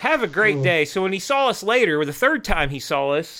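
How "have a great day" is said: mock, sugary, overly sweet polite tone. Retelling answering a cussing man, imitating killing with kindness. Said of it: "full kill 'em with kindness mode".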